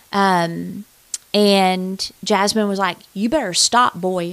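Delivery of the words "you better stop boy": put-on sassy little girl voice. Retelling what a tied-up little girl told the attacker: imitating Jasmine, sassy. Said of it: "she was sassy".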